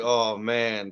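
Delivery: plain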